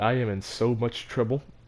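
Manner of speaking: ordinary delivery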